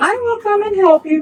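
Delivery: very high, squeaky, put-on woman's voice. Trying the character's voice again after being asked: high-pitched woman's voice. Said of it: "By high pitch this".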